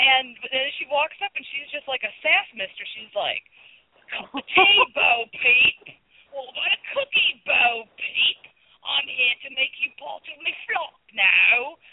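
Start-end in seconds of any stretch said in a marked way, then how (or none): 4.1-11.7 put-on high, slow, sassy Cockney accent. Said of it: "practicing all day on my Cockney accent".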